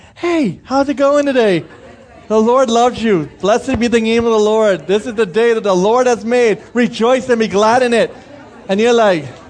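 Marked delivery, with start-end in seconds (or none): 0.2-8.2 mock cheerful, smiling voice. Imitating a morning person who comes up smiling: imitating a cheerful morning person. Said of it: "the person just comes and smiles".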